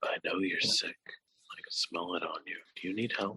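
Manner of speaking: barely-there, very hushed, quiet whisper. Voicing a girl who goes up to Avestis and whispers in his ear, very quietly. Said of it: "very quietly whispers in his ear".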